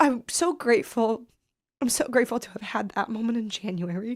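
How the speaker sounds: welling up with tears. Recalling ten precious minutes with her mom, welling up with tears. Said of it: "I'm welling up with tears now".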